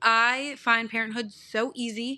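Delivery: normal talking voice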